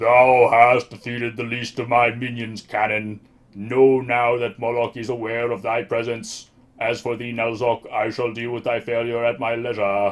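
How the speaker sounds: loud, booming voice. In a story scene, a voice booms out at Canon and Nalzok: booming voice of Moloch. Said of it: "a voice booms out".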